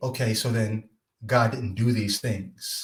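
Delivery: ordinary delivery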